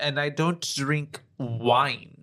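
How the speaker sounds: very slow, loud, teasing and cheeky. Retelling Dracula refusing wine at dinner: imitating a cheeky Dracula. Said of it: "he was being cheeky".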